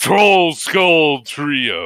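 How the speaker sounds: raspy, hoarse, booming call, Trio drawn out. A character announcing the Troll Skull Trio's grand opening: hoarse booming voice. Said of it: "hoarser, but he seems to still be trying to get it booming a booming voice out".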